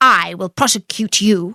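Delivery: plain reading voice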